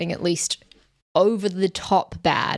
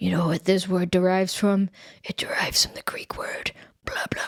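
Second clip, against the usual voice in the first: put-on low, gravelly-voiced man impression; 3 dB quieter than usual. Describing a hard-to-hear film scene, quoting the character in a low gravelly voice. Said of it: "he speaks in this like really low gravelly voice".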